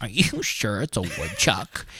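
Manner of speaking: breathy, soft, slow, skeptical whispered delivery. Retelling how Mallory questioned the animal sighting, imitating Mallory doubting. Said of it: "Why does Mal sound like that?".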